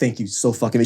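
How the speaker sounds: ordinary talk, nothing marked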